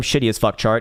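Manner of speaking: ordinary delivery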